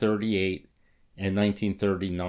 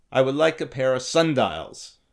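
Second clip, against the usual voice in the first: put-on thick, laid-on German accent; 4 semitones higher than usual. Retelling what Einstein asked for in the store: Einstein impression with thick German accent. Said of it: "in his thick German accent".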